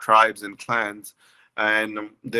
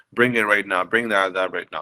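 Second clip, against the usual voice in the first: plain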